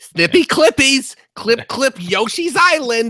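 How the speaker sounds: silly, put-on cartoonish game-character voice. Asked to do the Snipperclips voice, answering in the Snipperclips voice. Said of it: "please answer in the Snipperclips voice".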